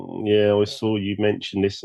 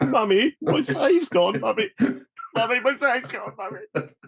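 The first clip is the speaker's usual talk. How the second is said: put-on very high, cracked, weepy, tearful child voice; 14 semitones higher than usual. Acting out their childhood self pleading to their mother, mock crying with a cracked voice. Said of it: "desperate tears in my eyes and that sort of cracked voice".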